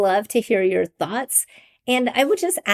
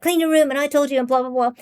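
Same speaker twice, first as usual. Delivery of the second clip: mock scolding, higher and faster; 4 semitones higher than usual. Recalling how her mother disciplined them as children, imitating mother's scolding. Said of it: "disciplining us as children".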